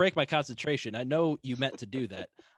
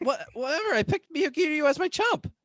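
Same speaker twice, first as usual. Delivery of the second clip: loud disgusted groan, much higher; 4 dB louder than usual. In a scripted exchange, reacting after being dared, loud disgusted groan. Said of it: "Louder, disgusted groan".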